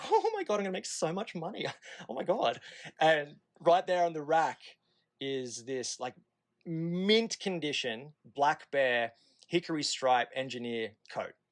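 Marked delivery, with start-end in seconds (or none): 0.1-2.6 mock giggling like little schoolgirl, higher, excited gushing. Recalling walking into a shop with Kelsey, the speaker retells giggling like a little schoolgirl. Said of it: "I just start giggling like a little schoolgirl".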